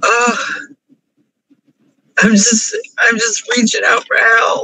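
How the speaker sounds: crying, tearful speech. Talking through a painful moment, crying. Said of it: "I'm crying too much".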